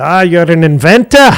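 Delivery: very loud, high-pitched Scottish brogue. Speaker retelling what John said across the table, imitating John's Scottish accent. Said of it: "He had a Scottish accent".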